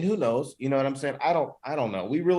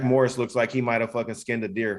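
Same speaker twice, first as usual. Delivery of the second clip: usual speaking voice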